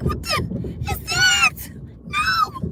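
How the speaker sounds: scared voice shooting very high in fright. Retelling being scared the car would fall into the ground; acting out own high-pitched fright. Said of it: "how high the voice goes up".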